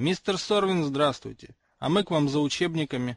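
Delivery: plain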